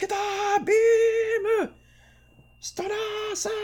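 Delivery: very high, slow call with "Beam" stretched out. Imitating a voice actor's attack-name lines: Akira Kamiya voice. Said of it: "Akira Kamiya was like".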